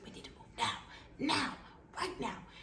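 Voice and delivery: slow, urgent, insistent whisper. Retelling what a surgeon said to another lady, retelling a whisper. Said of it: "And she's whispering".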